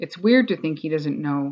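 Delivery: ordinary delivery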